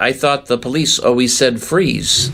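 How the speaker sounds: ordinary delivery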